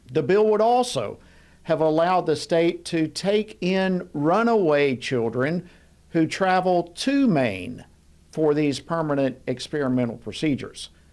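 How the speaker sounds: slow, careful, deliberate delivery. A commentator explaining a proposed bill to the audience, slow and careful. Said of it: "I'm going to say this slowly and carefully".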